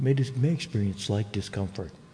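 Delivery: gentle put-on dentist voice.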